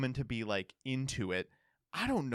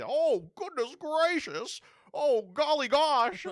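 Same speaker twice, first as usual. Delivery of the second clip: put-on very high, loud, slow old-timey fella voice; 14 semitones higher, 5 dB louder than usual. Joking about how 1920s guys would react; 1920s George Bailey-style guy voice. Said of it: "like nineteen twenties George Bailey style guys".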